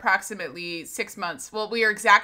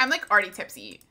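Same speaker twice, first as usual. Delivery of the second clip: ordinary delivery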